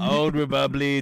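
put-on old grandpa voice with Slavic accent. Imitating how the other speaker normally says it, Slavic grandpa voice. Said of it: "sounds like a Slavic grandpa".

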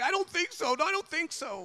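tearful, very high-pitched crying voice. Telling how he tried to convince his brother he did it: imitating brother crying. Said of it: "he's crying like".

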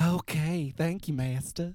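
high-pitched Southern creature voice. Acting out a reply after being called Southern Gollum, in a Southern Gollum voice. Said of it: "what about you, Southern Gollum?".

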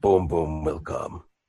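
deep, slow, soft, halting dim brute voice. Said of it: "he goes, he goes".

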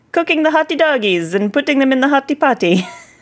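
hammy put-on Italian accent. A host introduces this week's show-business segment in an unhelpfully italian accent.

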